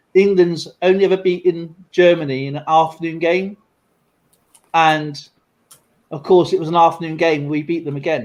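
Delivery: ordinary delivery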